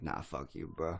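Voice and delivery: put-on plain, normal speaking voice with no accent. Voicing Luigi answering Mario, Luigi talking normal. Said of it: "he just talks completely fucking normal".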